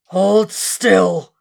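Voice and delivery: loud, rough, lion-like roar, slurring the S. A voice speaks to a man pinned on a steel table, roaring, lion-like voice. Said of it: "as if through a roaring lion".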